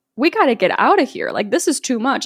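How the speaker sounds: put-on panicked voice. Retelling a movie scene where Emerald is freaking out: imitating Emerald freaking out. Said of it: "Emerald is freaking out".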